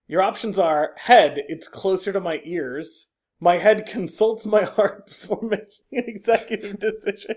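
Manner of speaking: barely holding in laughter, stifled laugh. Reading out quiz answer options, holding back a laugh. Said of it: "I'm trying not to laugh".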